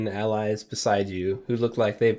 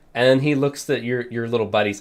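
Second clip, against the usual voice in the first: usual speaking voice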